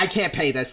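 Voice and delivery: put-on panicked voice. Retelling what a caller said after his bank exploded: imitating someone panicking. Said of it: "absolutely panicking".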